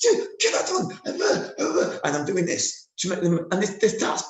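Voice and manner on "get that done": put-on angry scream, very high pitched. Speaker describes pretending to be angry with the players, retelling a scream at them. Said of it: "And I'm screaming at them".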